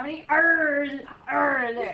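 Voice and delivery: put-on pirate voice. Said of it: "I sound like a pirate".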